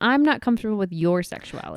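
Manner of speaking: normal talking voice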